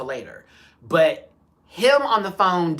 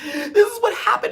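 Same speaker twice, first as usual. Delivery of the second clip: put-on sobbing, high, swooping, tearful and upset. Retelling how a woman got out of her car: imitating someone crying. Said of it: "she gets out crying".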